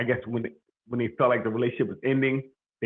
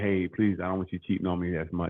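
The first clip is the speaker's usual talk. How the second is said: polite, kind, gentle tone; 5 semitones lower, 4 dB quieter than usual. Showing how to raise a complaint nicely: imitating a nice request. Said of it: "say it in a nice way".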